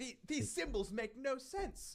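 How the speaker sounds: put-on tentative British accent. Quoting a Discord viewer on the symbols, attempted British accent. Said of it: "Was that an attempt at a British accent?".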